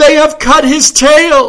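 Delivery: very loud, high, gasped-out outburst. Reading fiction, the Countess of Dashley dashes in to the detective, gasping. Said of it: "she gasped".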